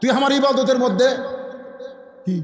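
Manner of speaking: high, sharp, snapping rebuke.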